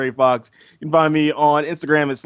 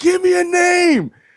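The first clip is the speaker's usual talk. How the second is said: very high, stretched-out, drawn-out shriek; 3 dB louder than usual. Recalling a FanFest panel, the speaker re-enacts their outburst: retelling own scream. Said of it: "I just screamed".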